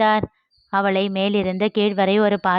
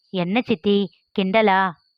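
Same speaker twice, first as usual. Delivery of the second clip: ordinary delivery, nothing marked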